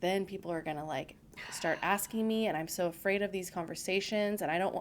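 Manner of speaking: plain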